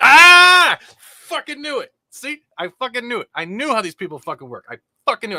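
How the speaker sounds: very high, very loud, gleeful, excited, swooping screaming. Streaming, after calling the result right, screaming excitedly to chat. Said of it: "I started screaming, chat".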